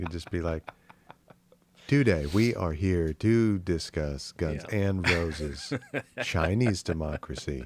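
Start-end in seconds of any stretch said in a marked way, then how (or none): 1.9-7.7 put-on robotic text-to-speech voice. Suggesting a voice bot to present their points, in TikTok voice bot voice. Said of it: "use the voice bot from TikTok".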